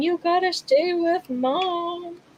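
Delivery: high, tearful half-yell, half crying, drawn out. Retelling finding a lost dog down the road: imitating own half-crying yell. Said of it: "half crying, half yelling at him".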